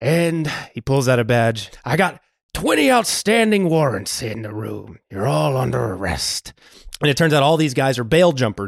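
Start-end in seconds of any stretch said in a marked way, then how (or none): 1.8-6.5 put-on gruff New York accent, movie-style. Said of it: "You love doing your Al Pacino accent".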